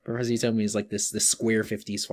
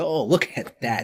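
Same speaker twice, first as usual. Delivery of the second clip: put-on forced enthusiasm, higher and louder; 3 semitones higher, 5 dB louder than usual. Quoting the Professor from an episode: imitating Professor's forced enthusiasm. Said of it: "forced enthusiasm is very fun".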